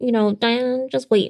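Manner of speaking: affected, nasally put-on voice. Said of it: "it's not just the nasally voice that I put on".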